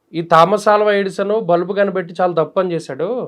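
ordinary talk, nothing marked

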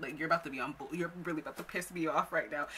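ordinary delivery

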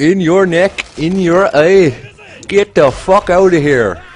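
bad put-on Northern Irish accent, drawn out. Speaker quotes his favourite commentating line: crappy northern irish accent. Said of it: "Sorry for my crappy Northern Ireland accent".

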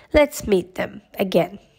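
usual speaking voice

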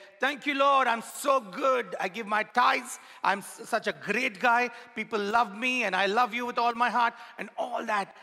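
proud play-acted voice. Preaching about the proud Pharisee, acting out his prayer: mocking a loud proud prayer. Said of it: "at the top of his voice".

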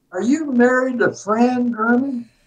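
put-on heavy Southern accent. Retelling a volunteer's questions at the door, in a thick southern accent. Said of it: "with a thick Southern accent".

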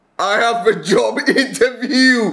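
shouting with excitement. Announcing news he found after checking his email, excited shouting. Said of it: "And that's why you're shouting".

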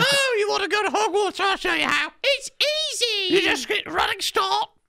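very high, sweet, coaxing mock motherly voice.

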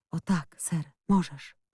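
whispering. A boy answers a girl who pleads to know if she can trust him, whispered. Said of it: "chłopiec wyszeptał tylko".

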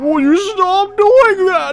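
dismayed, high, loud, slow camel-like wail.

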